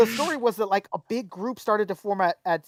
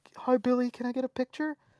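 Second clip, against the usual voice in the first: put-on meek voice, quieter and faster; 3 semitones higher, 5 dB quieter than usual. Retelling a fan asking Billy for a picture, imitating a meek fan. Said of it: "this like really meek".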